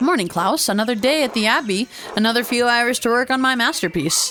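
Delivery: friendly, sugary-sweet, very nice character voice. Voicing Andreas greeting Klaus in a game: Andreas in the nicest voice. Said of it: "We'll give him the nicest voice".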